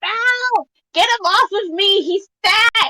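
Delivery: put-on very high, irritated twelve-year-old's annoyed shout. Voicing a twelve-year-old with his older brother crumpled on top, annoyed yelling. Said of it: "just the annoyed yelling of a twelve-year-old".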